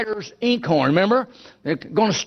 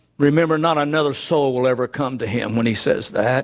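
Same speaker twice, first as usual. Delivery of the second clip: plain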